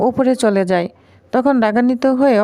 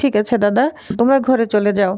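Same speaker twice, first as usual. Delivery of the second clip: ordinary talk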